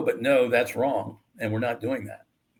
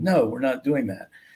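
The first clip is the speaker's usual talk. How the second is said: put-on critical tone. Recounting refusing her suggested detour on a trip, retelling a critical no. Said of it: "kind of a critical".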